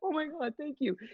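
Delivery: high, gushing, starstruck voice. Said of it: "She doesn't need me to be like".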